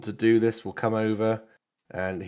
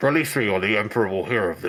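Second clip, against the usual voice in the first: voice sounding as if over a helmet radio. Voicing a bound prisoner speaking through his helmet comm: voice through a helmet comm. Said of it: "that sort of voice through, like, the comm in his helmet".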